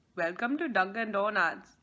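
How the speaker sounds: put-on Indian accent. Speaker shares a memory of Jonathan's Dunkin Donuts bit, Jonathan's Indian accent bit. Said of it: "Indian accent".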